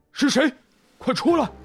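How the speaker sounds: alert loud call. Reading a fable, an electric ray hears a noise behind the weeds: wary shout. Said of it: "电鳐警惕地大喊".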